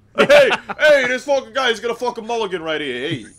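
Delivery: loud Brooklyn announcer voice. Voicing an imagined game announcer for prompts: brooklyn accent. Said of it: "he was, like, from Brooklyn".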